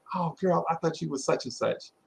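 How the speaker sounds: ordinary talk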